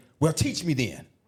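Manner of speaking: play-acted grave, pointed, intense, serious tone. Retelling own reply in the same argument: retelling own intense reply. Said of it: "with the same intense tone".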